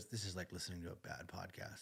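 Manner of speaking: very soft, hushed mutter under the breath. Retelling a remark made while he talked with his dad: imitating a mutter under breath. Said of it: "under her breath, goes".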